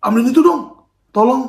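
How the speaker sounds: loud, harsh snapping tone.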